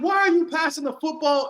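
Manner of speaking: yelling, pitched very high. A football fan recounts reacting to a player during a game, retelling a yell. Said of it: "I'm yelling at".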